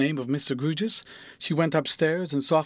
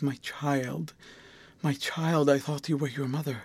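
ordinary delivery

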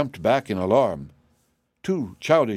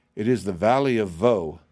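usual speaking voice

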